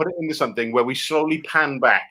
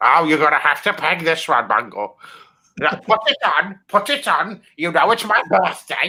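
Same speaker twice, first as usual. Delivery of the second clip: slow, deliberate, drawn-out put-on voice; 2 semitones higher than usual. Acting a requested scene in a dungeon as Zippy: Zippy voice. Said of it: "an impression of Zippy".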